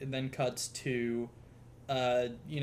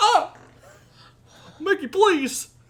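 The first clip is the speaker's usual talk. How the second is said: very high, very loud, dopey cartoon dog voice; 13 dB louder than usual. Speaker acting out an exchange, pleading with Mickey: Goofy voice.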